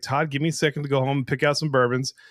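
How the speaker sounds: ordinary talk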